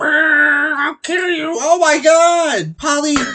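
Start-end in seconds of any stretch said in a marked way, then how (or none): 0.0-1.5 slow talking crow voice, "brr" drawn out. Retelling what a talking pet crow used to say: imitating a talking pet crow. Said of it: "he'd be like".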